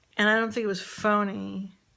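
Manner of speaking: ordinary delivery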